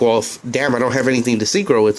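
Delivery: ordinary talk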